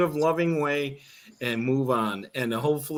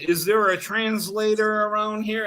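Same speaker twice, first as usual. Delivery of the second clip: put-on pitched-up scream at the top of the lungs; 7 semitones higher than usual. Speaker retells someone screaming for a translator at a man who barely speaks english, retelling a scream at top of lungs. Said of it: "screaming at the top of the lungs".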